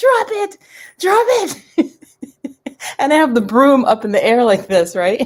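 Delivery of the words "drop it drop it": shrill, very high, very drawn-out acted scream. Retelling screaming at the cat holding a broom: imitating someone screaming. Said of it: "I'm screaming at my cat".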